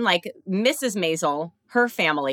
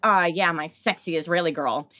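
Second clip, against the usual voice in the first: put-on seductive, sultry bedroom pillow-talk voice. Retelling a sex partner's attempt at dirty talk: imitating dirty talk. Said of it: "he was trying to do dirty talk".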